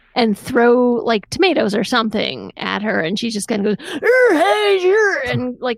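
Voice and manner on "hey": high, halting, barely articulate wordless grunting noises. Retelling a scene where she chases trick-or-treaters: imitating a barely articulate grunt. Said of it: "That was a shockingly good impression".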